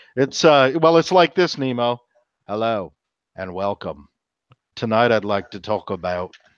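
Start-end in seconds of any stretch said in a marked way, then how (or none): 2.4-6.3 buttery-smooth Australian accent. Imitating a podcaster's delivery after an Aussie accent is mentioned: smooth Australian accent. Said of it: "smooth Aussie accent".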